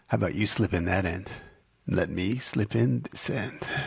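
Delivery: put-on bedroomy voice. Quoting a character's line to co-hosts: imitating Buck's bedroomy voice. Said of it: "he makes his voice real bedroomy".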